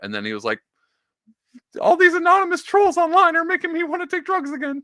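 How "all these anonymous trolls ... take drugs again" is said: put-on Kermit-like frog voice, higher and louder. Imitating Jordan Peterson talking about online trolls: Kermit-like Jordan Peterson impression. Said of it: "That's my Kermit impression".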